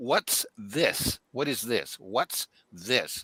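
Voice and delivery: slow, peculiar synthesized alien voice-box voice. Retelling what an alien said to him: imitating a high squeaky alien voice. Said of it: "It sounded high and squeaky".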